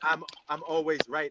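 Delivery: ordinary delivery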